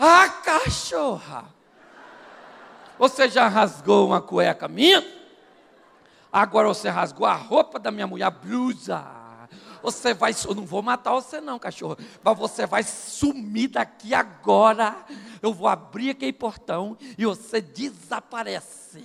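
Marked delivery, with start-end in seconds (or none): none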